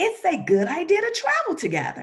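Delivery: very high, swooping, animated character voice. Speaker demonstrating how to read direct dialogue aloud, character voice for dialogue. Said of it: "you see how my voice fluctuates".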